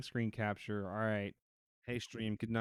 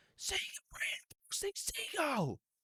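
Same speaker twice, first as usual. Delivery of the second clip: yell pitched way up, very high. Retelling how a voice actor yells at a seagull: imitating a loud yell. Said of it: "as loud as he".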